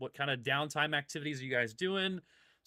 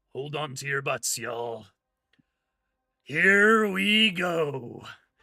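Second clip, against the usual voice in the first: booming, loud, slow, drawn-out gravelly voice; 9 dB louder than usual. Voicing a ship announcement as the craft dives: gravelly voice. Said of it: "the gravelly voice comes on".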